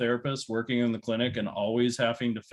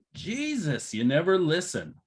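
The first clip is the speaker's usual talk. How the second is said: drawn-out, swooping angry yell; 6 semitones higher than usual. Recounting hearing his wife yell out, retelling her mom-voice yell. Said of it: "that was mom voice".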